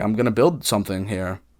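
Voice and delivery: ordinary talk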